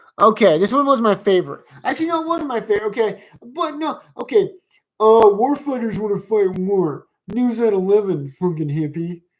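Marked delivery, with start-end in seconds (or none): 5.0-9.2 mocking put-on dumb voice, slower. Quoting a line he finds dumb, in a mocking dumb voice. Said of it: "I'm going to say that in a normal voice".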